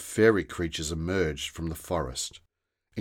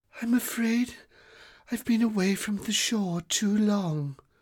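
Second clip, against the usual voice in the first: very high, weak, drained fairy voice. Narrator reads a slumped fairy guardian answering a boy's question, softly. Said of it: "Sandy replied softly".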